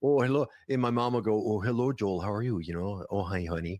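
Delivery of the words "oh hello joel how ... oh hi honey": put-on Minnesota accent, slower. Speaker imitating their mom greeting them, in their mom's minnesota accent. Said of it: "that's an accent in Minnesota".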